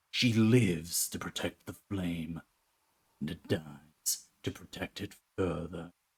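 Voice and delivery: put-on gruff werewolf character voice. Voicing a werewolf character's line, in an attempted gruff werewolf voice. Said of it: "I can't get it as gruff as I'd like".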